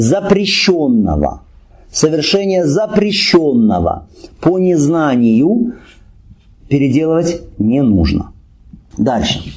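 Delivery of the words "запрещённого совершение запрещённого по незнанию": slow, careful, deliberate emphasis on each word. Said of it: "ещё раз говорим внимательно".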